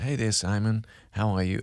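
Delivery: casual, chatty, informal female AI assistant voice. Retelling how a chat assistant greets the speaker: imitating ChatGPT informal female voice. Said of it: "I've gone for an informal female".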